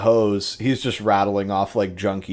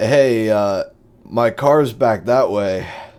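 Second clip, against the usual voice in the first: put-on drunken slur, words pasted and sliding together; 4 dB louder than usual. Acting out a pasted guy in an alleyway, imitate him slurring his words. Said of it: "It's like slurring his words".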